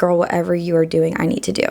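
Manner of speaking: usual speaking voice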